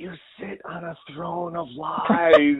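slow, high, drawn-out, leaned-in stage whisper. Retelling a whispered movie line from Elf: imitating Will Ferrell whispering. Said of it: "Will Ferrell leans in and whispers".

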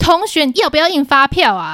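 impatient, annoyed, angry and fed-up tone. Speaker retells asking a student the same question a third time, reenacting angrily asking. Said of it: "第三次问我就真的生气了".

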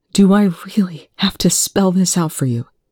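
hushed whisper. A man answers someone who insists on sitting with him, whispered. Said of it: "he whispered".

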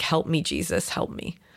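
breathy, whispered, mumbled voice. Retelling what a caller says before hanging up on a 911 call: imitating someone mumbling to herself. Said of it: "mumble to herself".

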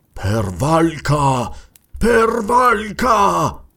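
words panted out between gasps, gasping cry. Watching a face dissolve into a monstrous serpent head, he cries out, gasping. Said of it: "ansimò Kul".

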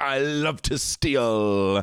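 high, slow silly voice, "steal" stretched out. Retelling what a child said while stealing money: silly voice. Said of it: "Do it with a little silly Billy voice".

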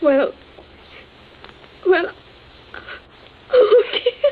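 tearful weeping. Pressed to repeat exactly what he said, crying. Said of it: "stop crying".

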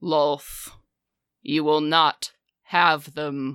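disembodied, chamber-filling, echoing voice. Narrating a scene, a voice echoes from around the chamber: booming voice. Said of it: "you hear this booming voice echo".

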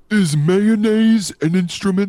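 very high, squeaky, loud shouted cartoon starfish voice. The speaker does impressions nobody asked for, here a Patrick impression. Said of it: "was that your Patrick impression?".

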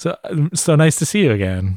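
a little bashful, shy character voice. Voicing a bashful reporter greeting a character: bashful character voice. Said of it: "a little bashful".

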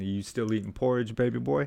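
mocking taunting tone. Retelling a take spent taunting a co-star: retelling taunting trash talk. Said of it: "I'm just killing Ray Winston about".

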